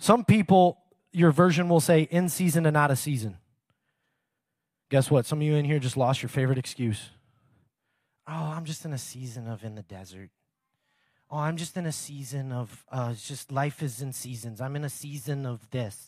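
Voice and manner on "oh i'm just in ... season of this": soft, mocking fake accent of unknown origin. Mocking the audience's excuses, imitating them in an unidentified put-on accent. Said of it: "I don't know what accent that is, but it's coming out".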